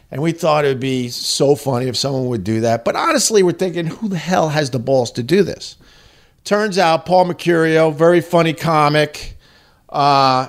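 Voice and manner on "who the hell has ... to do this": usual speaking voice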